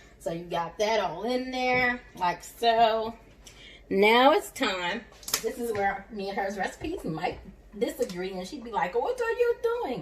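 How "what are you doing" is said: terrible put-on Caribbean accent, very high-pitched. Quoting a woman whose recipe differs from the speaker's, in a terrible Caribbean accent. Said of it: "That was a terrible Caribbean accent".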